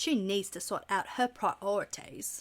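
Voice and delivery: bad, hushed, breathy British accent. Repeating the toast line: Rupert Grint impression. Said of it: "That's my Rupert Grint".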